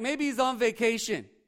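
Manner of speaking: mocking, taunting tone. Retelling a prophet taunting four hundred rival prophets: mocking taunt, retelling. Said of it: "he made fun of 'em the whole time".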